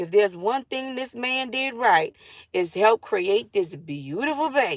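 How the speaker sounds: plain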